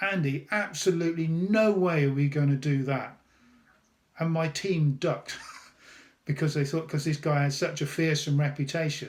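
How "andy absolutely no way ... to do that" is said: mock firm, very strong, forceful voice. Retelling how they piped up to a feared senior exec; very strong voice. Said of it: "in a very strong voice".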